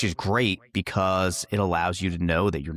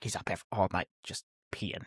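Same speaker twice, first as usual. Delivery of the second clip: mock put-upon, grumbling complaining tone; 9 dB quieter than usual. Retelling a mother's complaints after a night of beers: imitating Mom complaining. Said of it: "she'd be like".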